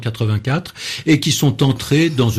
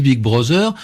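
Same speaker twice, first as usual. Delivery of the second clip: "big brother" said in a French accent; 2 semitones higher than usual. Explaining how french speakers say an english phrase, french accent. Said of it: "avec un accent français, avec une, on dit pas ça à l'anglaise".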